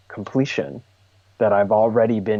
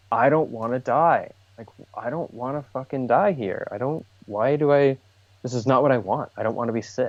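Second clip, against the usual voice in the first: mock tearful crying voice, higher pitch; 4 semitones higher than usual. Retelling pleading while crying in someone's lap: imitating own crying plea. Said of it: "I'm basically crying in her lap".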